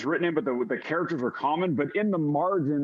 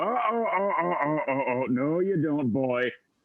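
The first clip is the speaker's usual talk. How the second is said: put-on elderly old man's voice. A storyteller voices an old man speaking inside the listener's head, old man's voice. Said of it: "you hear the old man's voice in your head go".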